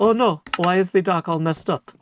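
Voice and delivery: dismayed voice, caught off guard. While playing, speaker imagines Corrales coming by, in Corrales voice. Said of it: "This is my best Corrales voice".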